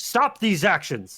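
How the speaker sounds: commanding, proclaiming call-out. Voicing a spellcasting creature calling out to the party: calling out a command. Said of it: "it calls out".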